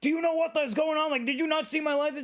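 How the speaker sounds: shrill, very high-pitched screaming. Speaker retells the man who got out of his car after she pulled over: imitating a man screaming. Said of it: "he was instantly screaming at me".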